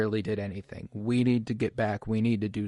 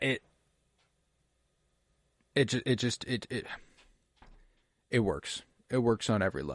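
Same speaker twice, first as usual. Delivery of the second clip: stuttering, stumbling, tripping over words; 4 dB quieter than usual. Recording a podcast alone, stuttering over words. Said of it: "I'm sorry if I'm stuttering over my words".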